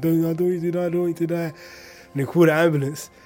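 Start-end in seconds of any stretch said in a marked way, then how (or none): 0.0-1.5 mock hysterical crying, higher pitch. Retelling a friend's plea after a stabbing: imitating someone crying hysterically. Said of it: "he got hysterical, started crying".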